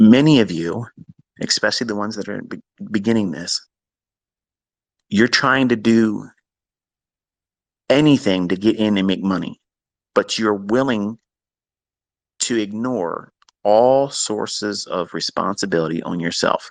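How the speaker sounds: real slow, painfully drawn-out delivery. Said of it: "I'm gonna say it again real slow and painfully".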